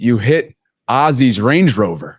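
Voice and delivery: put-on dead-serious deadpan delivery. On air, recounting what a guest said as a joke, retelling a dead-serious remark. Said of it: "he said it dead seriously".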